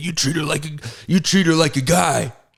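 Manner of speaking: high, pushy, barking coach voice.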